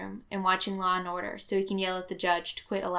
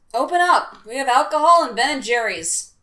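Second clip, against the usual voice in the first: booming, very loud, high holler; 5 semitones higher, 11 dB louder than usual. A visitor banging on the door calls to those inside, hollering. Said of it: "Tony hollers".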